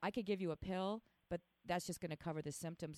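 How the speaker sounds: usual speaking voice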